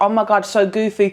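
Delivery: put-on, sneering, annoying, mocking parody voice. Mocking people who call themselves goofy: mocking imitation of annoying people. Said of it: "I hate when people are like".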